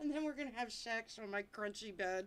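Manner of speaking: plain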